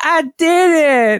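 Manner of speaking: put-on very high, cute, adorable toddler voice. Retelling a little boy finishing a puzzle, imitating his adorable kid voice. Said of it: "in like the most adorable voice".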